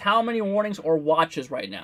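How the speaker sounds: ordinary delivery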